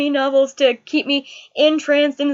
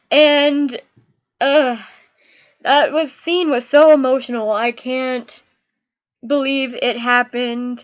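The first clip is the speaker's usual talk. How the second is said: ordinary delivery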